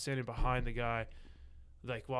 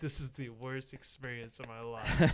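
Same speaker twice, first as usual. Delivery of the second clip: ordinary talk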